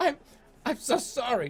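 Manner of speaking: very high, stumbling, stammering voice. Narrator reads the bookkeeper apologizing after you threaten him, stammering. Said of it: "the bookkeeper stammers".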